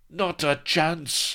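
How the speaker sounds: roar pitched very high. The French pirates close on Blood with their cutlasses, roaring. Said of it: "roared the French pirates".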